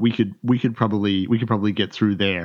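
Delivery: ordinary talk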